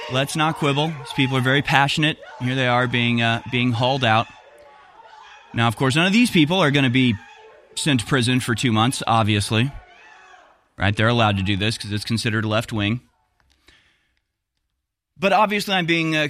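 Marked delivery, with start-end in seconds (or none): none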